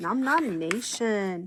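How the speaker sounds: slow, drawn-out, stretched calling out. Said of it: "I have to say it like that every time".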